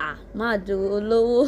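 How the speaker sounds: usual speaking voice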